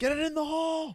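put-on shrill, very high, super loud yell. Retelling how a guy yelled at a golfer about to hit, retelling a super-loud yell. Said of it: "yells, like, ... super loud".

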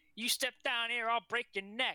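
put-on thick Georgia accent. Retelling a wrestling moment, imitating AJ Styles' strong Georgia accent. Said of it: "the Georgia accent comes through so strong".

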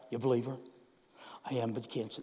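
very low, very quiet mutter under the breath. Acting out a cryptic message at work, muttered under the breath. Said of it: "like under your breath".

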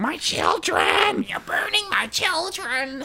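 very high, shrieking spider-lady voice, screaming. Retelling how they burned the spiders, imitating a screaming spider lady. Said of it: "spider lady voice in our head just, like, screamed".

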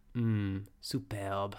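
put-on French accent. Recounting the end of a show, quoting Ina, in a French accent. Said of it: "in like a French accent".

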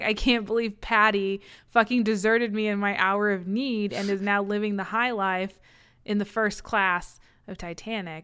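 ordinary talk

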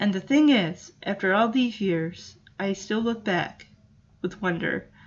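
choked-up, emotional, voice catching. Speaking to listeners and apologizing afterwards, getting choked up. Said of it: "I'm getting choked up there".

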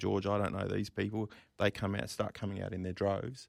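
ordinary talk, nothing marked

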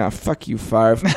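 put-on muttering under the breath, quiet. Imagining a former teammate's reaction: imitating Aaron Rodgers mumbling under his breath. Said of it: "mumbling under his breath saying".

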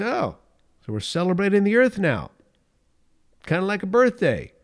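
put-on sarcastic voice. At the dinner table, speaker retells what he said to them, imitating sarcastic remark. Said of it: "His words were dripping with sarcasm".

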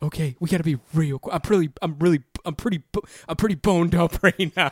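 nervous, flustered, stumbling, self-interrupting put-on panic. Playing a nervous caller on a phone sex line: acting panicked. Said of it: "Why are you panicking?".

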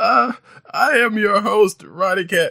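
talking through laughter. Opening the episode and introducing himself, laughing while talking. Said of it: "if you're wondering why I'm laughing".

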